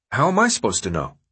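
ordinary delivery

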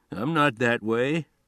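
usual speaking voice

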